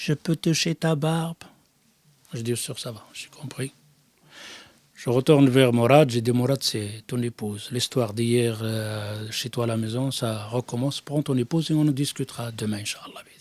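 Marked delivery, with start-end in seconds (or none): 0.0-1.4 put-on baby voice, quieter. Retelling what someone suddenly asked him, in a baby voice. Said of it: "il parle comme un bébé".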